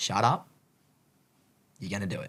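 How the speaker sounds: angry muttering. Retelling talking to oneself during a rainy run: imitating own angry self-talk. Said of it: "I was so angry".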